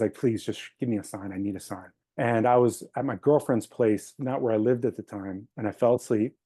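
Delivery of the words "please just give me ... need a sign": begging tone, lower and quieter. Retelling a prayer at the moon one night: imitating own begging. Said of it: "I was begging".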